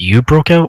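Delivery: whispering. Leaning in to another character's ear in the game: whispering in someone's ear. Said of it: "just kinda lean into your ear and just kinda whisper in".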